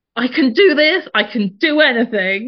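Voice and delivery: acted, high, loud, drawn-out rallying shout. Retelling shouting affirmations from the wall during a birth: imitating own past shout.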